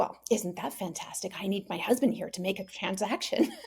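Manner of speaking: sarcastic, annoyed, grumbling mutter under the breath. Retelling being refused a charge while getting groceries, muttered under her breath. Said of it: "I just kind of muttered under my breath".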